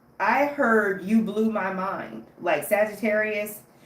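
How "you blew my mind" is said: plain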